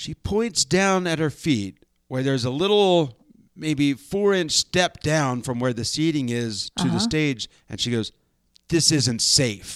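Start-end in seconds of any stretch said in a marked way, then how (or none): 8.7-9.8 mock-deadpan delivery, slower. Speaker retells a woman pointing at the small stage step, mimicking a deadpan remark. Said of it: "with just a deadpan expression".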